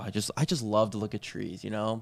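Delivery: sarcastic, mock-sincere, fake-enthusiastic gushing. Joking that nature is loved, though it is disliked: sarcastic fake enthusiasm. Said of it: "this is all sarcasm".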